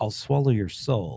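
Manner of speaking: low, creepy, quiet half-whisper. Narrator voices a character speaking so only one player hears, in a half-whisper. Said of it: "He whispers".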